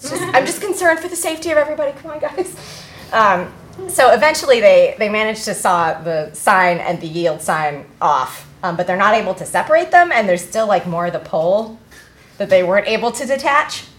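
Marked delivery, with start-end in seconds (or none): 0.0-2.5 fast, high forced calm over plain panic. Retelling acting concerned while secretly panicking: imitating own put-on calm while panicking. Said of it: "but still pretending it's okay".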